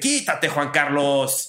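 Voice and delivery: mock rude, pushy, impolite delivery. Retelling how a family member brushes someone aside: imitating Juan José's rude order. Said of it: "no seas grosero".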